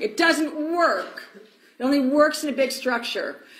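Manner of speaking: high, drawn-out, unraveling, at-wit's-end outburst. Retelling a former staffer freaking out on the phone: imitating someone freaking out. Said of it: "freaking out on me, unraveling".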